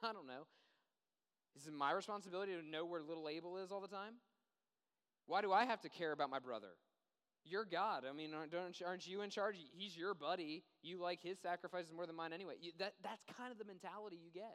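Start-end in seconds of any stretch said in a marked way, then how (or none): 0.0-12.5 offhand, loud, shrugging indifference. Acting out Cain answering the Lord about Abel: shrugging indifference as Cain. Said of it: "it's almost like a shrug of the shoulders".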